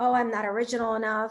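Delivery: ordinary delivery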